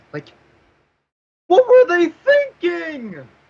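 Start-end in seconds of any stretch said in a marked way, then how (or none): 1.5-3.2 high, loud voice with swooping pitch. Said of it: "I sound sometimes like A V G N".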